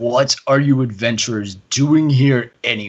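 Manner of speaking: big, deep voice dropped low. Game master voicing a figure at the head of the chapel to the adventurers: booming voice. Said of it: "You hear a booming voice".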